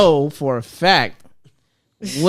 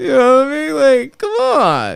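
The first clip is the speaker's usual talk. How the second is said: voice rising higher, high-pitched. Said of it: "your voice gets higher and shit".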